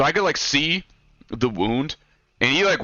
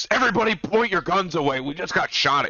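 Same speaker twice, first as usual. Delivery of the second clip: put-on panicked man's voice, higher; 3 semitones lower than usual. Retelling a man giving first aid after a shooting: imitating panicked orders. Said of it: "He like cannot fucking handle it".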